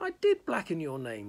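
protesting voice. Answering a man who laughs at what she did, she protests. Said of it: "Sophie protested".

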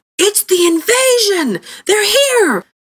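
very high, cried-out voice. A narrator reads an old man crying out to Fiddy and Brock: cried out. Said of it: "the old man cried to Fiddy and Brock".

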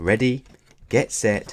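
ordinary talk

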